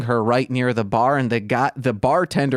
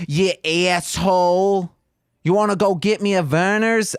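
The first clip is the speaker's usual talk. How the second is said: put-on Michigan accent, pitched up; 6 semitones higher than usual. After offering to show it, the speaker does a Michigan accent. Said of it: "You want to hear my Michigan accent?".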